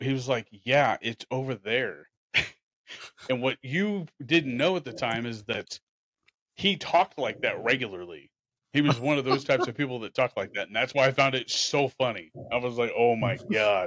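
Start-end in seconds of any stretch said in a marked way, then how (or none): 0.5-2.1 put-on annoyed, irritated tone, slower. Retelling a funny encounter, the speaker voices the dude's answer: mock-annoyed reply. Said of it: "he got so annoyed".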